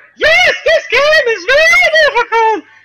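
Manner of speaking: very high, very loud, ridiculous squealing voice. Imitating the co-host's line about the game: imitating Jess. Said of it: "if you're gonna do my voice".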